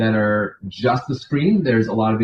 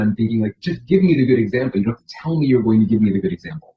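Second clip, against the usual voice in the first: normal talking voice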